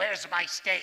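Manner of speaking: grumpy, gravelly voice, very loud. Retelling what a grumpy friend would say out of nowhere: imitating Scoot's gravelly voice. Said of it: "he'd say in a gravelly voice".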